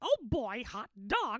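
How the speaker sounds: high, mousy voice, slowed down. Showing the fellas how to slow the voice down: Mickey Mouse voice. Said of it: "Mickey, and then you're going to slow it down".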